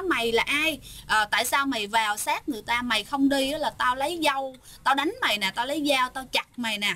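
usual speaking voice

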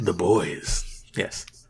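eerie, spooky ghost-story tone. Confirming which show a figure comes from to a co-host: spooky voice. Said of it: "You said that in a really spooky way".

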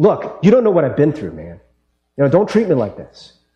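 put-on defensive, bristling pushback delivery. Retelling his first meeting with Reverend Cho, acting out getting defensive. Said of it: "I got all defensive".

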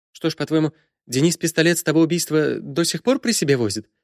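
meek, unsure, timid, high-pitched voice. Irina pushes back on Lekha; timid objection. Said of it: "робко возразила Ирина".

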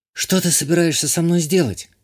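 scared, anxious, frightened tone, pitched a little high. A restrained woman questions the man holding her, frightened. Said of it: "Испуганно спросила Иштания".

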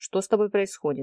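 ordinary delivery

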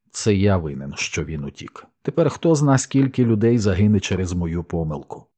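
ordinary delivery

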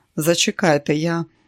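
plain reading voice

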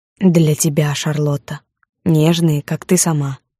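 ordinary delivery

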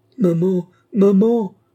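very high, loud, frightened, panicked crying out. Narrator reads a frightened little boy calling for his mother, panicked cry. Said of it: "cria le petit garçon affolé".

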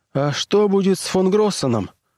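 shy, hesitant, timid, slightly high. One of the technicians asks a question after the captain leaves the screen: timid question. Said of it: "робко спросил один из техников".

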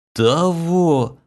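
whispering. Chloe repeats the courtier's last word, whispering. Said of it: "прошептала Хлоя".

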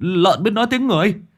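terrified, very high-pitched frightened stuttering. Narrator reads terrified village youths pointing at the sound: frightened stammer. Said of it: "Họ chỉ tay lắp bắp".

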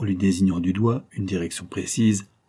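plain reading voice

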